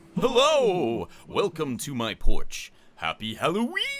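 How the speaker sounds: loud, spooky put-on ghost voice. Making a Halloween projector video on the porch, in a Halloween voice. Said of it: "Your stupid Halloween voice".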